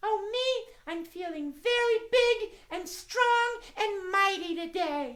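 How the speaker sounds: squeaky, very high, slow, tiny little mouse voice. Asked by the host how she feels today, Miss Mousie answers: Miss Mousie puppet voice. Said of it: "It's my friend Miss Mousie".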